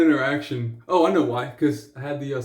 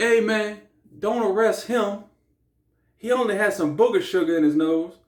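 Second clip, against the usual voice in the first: slangy put-on urban drawl, pitched up; 7 semitones higher than usual. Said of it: "the accent over there".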